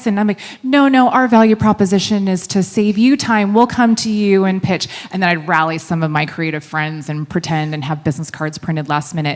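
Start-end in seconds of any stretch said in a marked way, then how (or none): 0.6-4.9 put-on British accent, pitched up. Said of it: "I answer the phone in a British accent".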